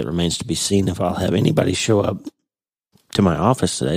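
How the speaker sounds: small crack in the voice. Opening a podcast episode, the host speaks with voice cracking slightly. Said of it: "my voice cracked a little bit".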